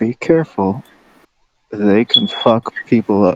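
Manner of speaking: subtle, quiet stage whisper, spoken to the side. [name] leans over to Fritz and Rin with a warning, half-whispering. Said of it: "kind of whisper".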